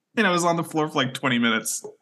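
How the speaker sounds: ordinary talk, nothing marked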